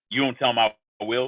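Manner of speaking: ordinary delivery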